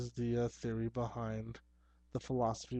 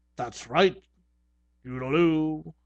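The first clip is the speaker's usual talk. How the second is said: put-on pirate voice, higher and louder; 4 semitones higher, 10 dB louder than usual. Showing the pirate voice his wife made him do with the puppet: pirate voice. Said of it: "do a pirate voice with it".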